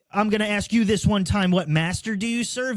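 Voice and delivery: plain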